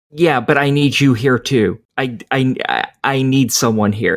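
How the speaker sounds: put-on panicked, tearful voice. Retelling a game's opening scene where the sister calls: imitating a panicked, tearful sister. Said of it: "She's panicking, in tears, freaking out".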